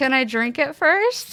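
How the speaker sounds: nervous, anxious voice. Asked what's in the glass before a toast, the guest answers, nervous. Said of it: "I'm nervous".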